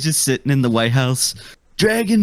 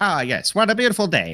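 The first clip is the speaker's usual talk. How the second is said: put-on old-fashioned, nineteen fifties style of talking; 3 dB quieter than usual. Imagining someone in the nineteen fifties on a nice day: Phil Hartman voice. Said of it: "Everybody talked like Phil Hartman".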